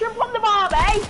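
put-on high, loud Australian accent.

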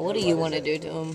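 normal talking voice

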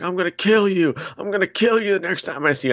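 acted-out, shrill, very high screaming. Retelling a fighter's trash-talk promo, imitating Colby Covington screaming. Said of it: "he's screaming".

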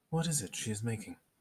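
mild, soft, gentle voice. Reading a novel aloud, a stranger questions a woman in a gentle voice. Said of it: "in that gentle voice".

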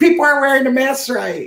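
very high-pitched, complaining yell. Retelling a wife's complaint to the market manager: imitating wife yelling. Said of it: "started yelling".

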